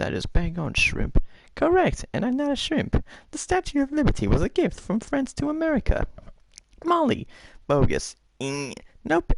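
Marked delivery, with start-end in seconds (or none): 1.6-7.3 very high squirrely voice. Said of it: "Okay, Squirrely".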